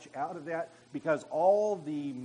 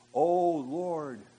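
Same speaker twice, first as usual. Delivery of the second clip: much louder put-on pious, holy, spiritual-sounding voice; 4 dB louder than usual. Mocking prayer performed as a show, in a pious spiritual-sounding voice. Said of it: "in a spiritually sounding voice".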